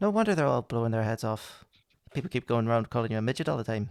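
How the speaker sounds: attempted Irish accent. Try out an accent from a film for your listeners: an attempted Colin Farrell Irish accent. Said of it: "That was me trying to do an Irish accent".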